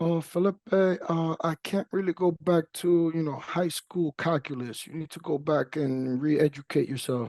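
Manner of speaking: put-on thick high Russian accent. Speaker imitates his Russian professor talking to him, thick Russian accent. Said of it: "he has a thick accent".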